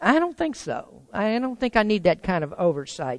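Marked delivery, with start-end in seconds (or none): none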